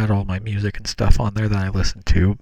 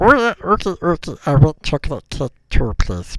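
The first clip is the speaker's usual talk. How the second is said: put-on monkey voice, much higher pitch; 7 semitones higher than usual. Speaker recalls what Bob would say: Bob the monkey voice. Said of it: "i'll try doing the bob's voice the monkey".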